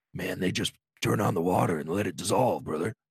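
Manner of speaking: deep, low-set character voice, pitch dropped way down. Retelling a podcast exchange about a wrestler: Jake the Snake impression. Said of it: "That's a pretty good Jake, Jake impression".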